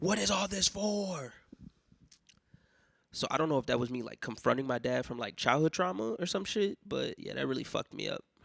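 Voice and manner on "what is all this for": high-pitched, slow yelling. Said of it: "I just start yelling at him".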